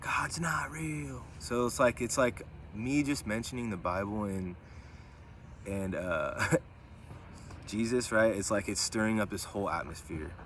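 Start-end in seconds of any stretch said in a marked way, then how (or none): 0.0-1.2 high, slow, whispered mocking taunt. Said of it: "Just mocking, mocking me".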